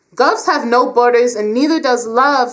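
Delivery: defensive, insistent, on-the-defensive delivery. Sasha answers her father, who refuses to allow it, defensively. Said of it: "she said defensively".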